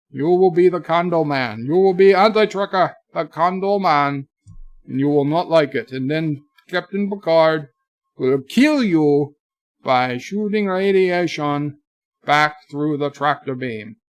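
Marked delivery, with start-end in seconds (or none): 0.2-5.9 mock, fake Scottish accent. Streamer addressing a chat viewer, in a put-on scottish accent. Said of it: "If it sounds Scottish, then it's Scottish".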